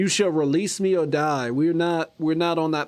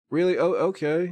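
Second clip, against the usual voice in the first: ordinary delivery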